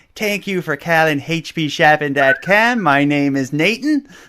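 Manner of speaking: thick regional drawl. Retelling how the guy next to him answered calls from California customers: imitating Nathan's thick accent. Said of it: "thickest accent".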